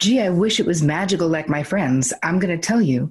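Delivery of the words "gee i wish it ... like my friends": ordinary talk, nothing marked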